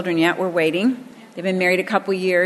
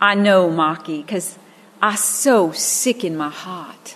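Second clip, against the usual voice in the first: put-on child's Boston accent with no R sounds. Retelling a child's reply to being told he must be born again: imitating Michael's Boston accent, no R. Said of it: "couldn't pronounce R and he had a Boston accent".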